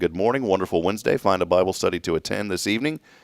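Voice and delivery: ordinary talk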